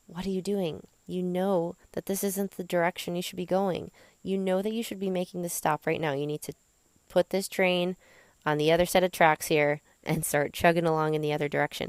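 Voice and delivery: ordinary talk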